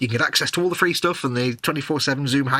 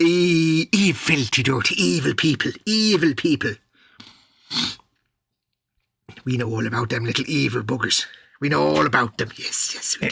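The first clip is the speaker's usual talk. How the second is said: really bad, slow, put-on Irish accent. Chatting about kittens and evil people, really bad irish accent. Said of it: "that really bad Irish accent".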